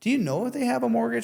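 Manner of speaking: upward, questioning lilt rising on mortgage. Giving feedback on a call, showing how to ask a question: questioning tone. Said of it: "use a questioning tone".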